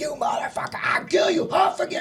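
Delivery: spitting, enraged outburst, pitched very high. Retelling the moment of kicking a beaten rival: imitating own enraged yelling. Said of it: "I was so incensed".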